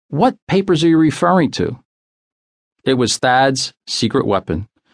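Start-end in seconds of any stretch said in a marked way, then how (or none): 0.1-1.8 stammering, much higher. Narrator reads a wife, choking on her wine, questioning her husband, stammering. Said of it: "Effie stammered".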